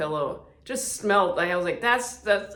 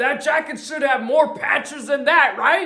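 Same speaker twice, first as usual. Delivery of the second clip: acted, very high, manic cackling laugh; 10 semitones higher, 6 dB louder than usual. Retelling what an old guy said on seeing his jacket, retelling a manic laugh. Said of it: "It was like a manic laugh".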